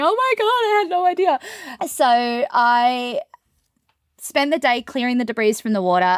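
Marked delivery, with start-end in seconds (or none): 0.0-1.4 high-pitched, tearful voice breaking down into crying. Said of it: "called me breaking down in tears going".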